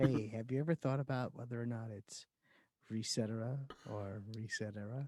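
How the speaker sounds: seductive murmur, very low, hushed, sexy voice. Joking about bedroom talk, the speaker asks a question in a put-on sexy voice. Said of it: "I like that sexy voice".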